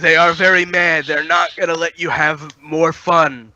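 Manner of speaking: shouting in a put-on voice. Shouting at Figment in character while people draw guns: yelling in character. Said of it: "I'm yelling at Figment".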